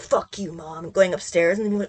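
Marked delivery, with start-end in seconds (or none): 0.0-0.9 low, hushed mutter under the breath. Retelling words said to oneself about mom: imitating muttering under breath. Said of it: "under my breath".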